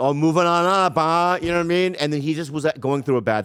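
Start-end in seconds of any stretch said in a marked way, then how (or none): 0.0-1.4 put-on mocking, teasing tone, louder. Retelling how they taunted a friend who dropped them: retelling own mocking taunt. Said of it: "How did you say it?".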